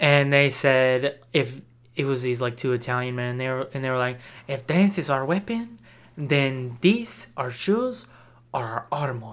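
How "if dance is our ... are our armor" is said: put-on ambiguous Spanish accent. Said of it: "That was an ambiguous accent you did".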